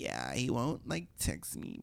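breathy, hushed, whispered, slow vocal-fry drawl. Describing girls seated nearby, imitating their vocal fry. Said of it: "these kind of vocal fry-ish girls who were like".

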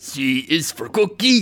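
rough, gruff, deep voice. Picking a voice to try, the speaker does a rough, gruff Cookie Monster voice. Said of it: "I feel like it's rough and gruff".

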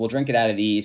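normal talking voice

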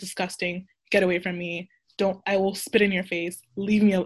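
put-on, very aggressive, hostile, combative outburst. Retelling her own reaction when set up with someone: imitating herself being very aggressive. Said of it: "very aggressive".

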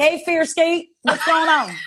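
put-on Southern accent with drawl. Joking about the name Skeet, greeting Fierskeet in a put-on Southern accent. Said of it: "I feel like I have to adopt a Southern accent".

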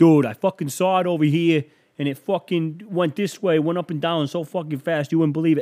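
put-on Brooklyn borough accent. Doing an interpretation of someone from Brooklyn who saw a UFO, Brooklyn accent. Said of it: "This is my interpretation of somebody from Brooklyn".

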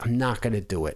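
plain

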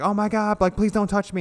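mock very high, terrified, pleading shriek. Retelling a movie scene where a woman role-plays a hostage: imitating scared screaming. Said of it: "scared and screaming".

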